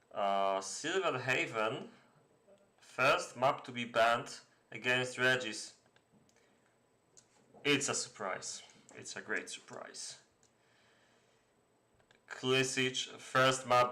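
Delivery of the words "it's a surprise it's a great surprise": breathy, dry, sarcastic half-whispered aside. Commenting on an expected map ban: sarcastic. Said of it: "I'll stop with the sarcasm".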